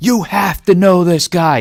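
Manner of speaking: put-on yelling in a man's voice. Retelling how Ben reacted while you searched for the Instagram, imitating Ben yelling. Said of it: "He's like yelling at me".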